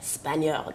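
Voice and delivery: "Spaniard" whispered breathily in a French accent. Describing a Spanish painter he met: Spaniard in French accent. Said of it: "I said Spaniard in a French accent".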